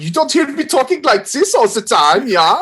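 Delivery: bad, put-on German accent, very high-pitched. Showing how a fake german accent would sound: fake german accent. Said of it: "please do that forever".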